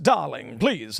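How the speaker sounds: put-on genteel, refined North Atlantic accent with drawl. Imitating parents talking to their children: north atlantic accent. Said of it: "I'm kidding with the North Atlantic accent".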